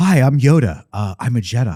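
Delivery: very low, deep, plain-spoken voice. Joking about how Yoda used to talk: Yoda talking like Bryce Dallas Howard. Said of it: "He used to talk like Bryce Dallas Howard".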